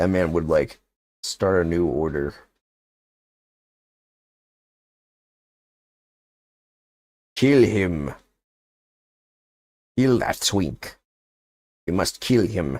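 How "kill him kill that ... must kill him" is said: put-on Russian accent. Performing a short bit before naming it, imitated Russian accent. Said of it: "That's my Russian accent".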